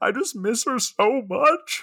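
very high, very slow, drawn-out blubbering weeping. Joking about people moved to tears by food: mock weeping. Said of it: "just start just weeping".

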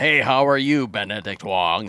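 put-on non-American speaker putting on an American accent. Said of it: "sort of an American accent".

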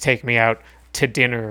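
normal talking voice

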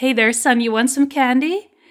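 put-on creepy clown voice. Retelling a comic panel where a clown comes up close, creepy clown voice. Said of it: "that's that's so creepy".

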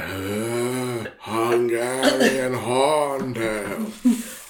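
mock airy delivery. Mocking how the other speaker just read the title: imitating an airy reading. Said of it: "You say it weird".

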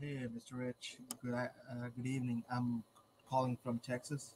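very quiet, faint, barely audible voice. Greeting on a phone call and saying where calling from: very quiet voice. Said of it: "You're super quiet".

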